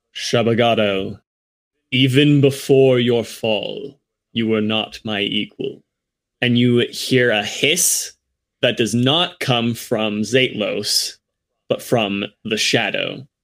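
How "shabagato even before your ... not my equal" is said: resonant, resonating, echoing voice. A voice comes out of the darkness around the circle, addressing Shabagato, resonating. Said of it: "this resonating voice".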